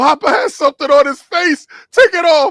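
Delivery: put-on very high, loud, frightened, pleading child. Retelling what a terrified grandson said: imitating a terrified grandson. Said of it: "'Cause he's terrified".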